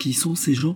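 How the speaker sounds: high, quavering, trembling voice, barely holding together. Narrator reads a woman asking the old coachman: trembling voice. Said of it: "demanda-t-elle d'une voix tremblante".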